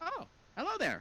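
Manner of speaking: extremely high-pitched voice. Storyteller voices Jack greeting both players at the gate, Jack in a high-pitched voice. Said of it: "extremely unprecedented higher pitched voice".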